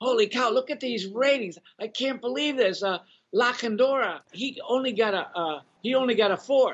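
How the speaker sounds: put-on Boston accent. Recalling how Dwayne reacted to the ratings, imitating Dwayne's Boston accent. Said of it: "Dwayne had a Boston accent, and so he'd go".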